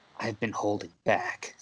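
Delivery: soft, hushed whisper, barely voiced. Having stabbed you through the throat, he leans in as you bleed out, whisper. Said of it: "he whispers".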